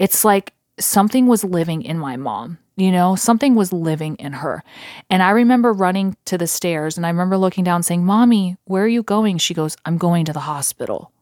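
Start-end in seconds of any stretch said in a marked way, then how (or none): 9.8-11.0 mock-creepy voice, much lower. Speaker retells their mother's reply to their question, imitating a creepy voice. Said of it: "she said it like just really creepy".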